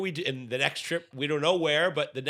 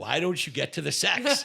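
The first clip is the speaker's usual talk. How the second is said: mock frustrated, impatient tone. Retelling a Simpsons scene about a nine hundred number, imitating a frustrated caller. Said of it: "he's getting frustrated".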